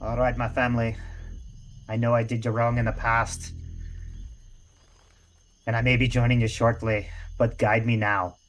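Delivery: muttering in a character voice. In a tabletop game, the player voices Cyrus before a stab: Cyrus muttering under breath. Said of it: "Cyrus is going to just mutter under his breath".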